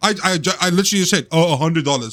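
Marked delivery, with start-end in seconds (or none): 1.3-2.1 acted-out mocking tone. Retelling the reply to a man asking how much money was wanted, in a mocking voice. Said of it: "but like in that mocking voice as well".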